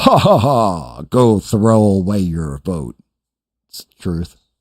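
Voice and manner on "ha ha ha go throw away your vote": acted, very slow, deliberate, drawn-out alien laugh. Retelling a scene where an alien mocks a voter: imitating an alien laughing. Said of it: "the alien starts laughing".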